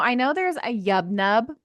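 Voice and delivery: ordinary talk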